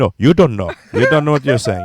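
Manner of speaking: put-on English with Arabic accent. Imitating a woman talking English on the phone with Syrian people: Arabic-accented English. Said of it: "immediately she was talking like".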